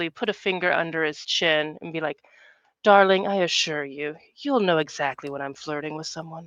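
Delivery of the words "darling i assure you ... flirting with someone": alluring, seductive tone. Voicing Teak as she leans in close to a laughing man, seductively. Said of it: "very seductively".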